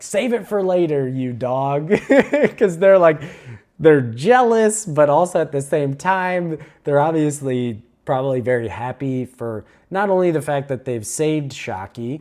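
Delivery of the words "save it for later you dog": mock yelling. Describing two people outside the room, retelling a yell. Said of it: "but they're yelling like".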